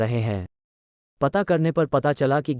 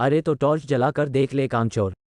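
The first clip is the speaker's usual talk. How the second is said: usual speaking voice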